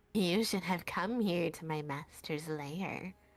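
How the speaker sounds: low, impish creature voice. Game master voicing a voice the players hear, in an imp-like voice. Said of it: "you hear an imp-like voice say".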